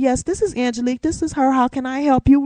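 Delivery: polished, courteous, professional phone voice. Showing how she answers the phone, in her business call voice. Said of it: "my voice I use whenever I'm on a business call".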